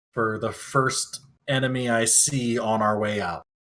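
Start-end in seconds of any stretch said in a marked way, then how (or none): none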